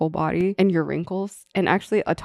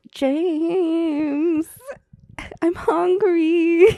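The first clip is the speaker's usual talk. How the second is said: put-on very high, babyish, pleading, cutesy, drawn-out voice; 12 semitones higher than usual. Asked to demonstrate aegyo in english, acting cute, aegyo style. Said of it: "Demonstrate in English".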